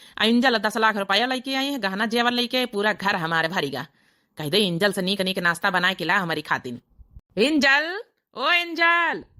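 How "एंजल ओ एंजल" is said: shouting, much higher, slower. A husband calls for his wife Angel to bring him breakfast, shouting for Angel. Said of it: "क्यों चिल्ला रहे हो?".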